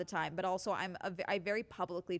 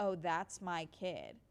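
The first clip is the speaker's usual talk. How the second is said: put-on breezy, unbothered, calm, slow, casual tone. Retelling body cam footage of a man lying to police: imitating a calm, casual liar. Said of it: "the guy is so calm and casual explaining his fucking lie".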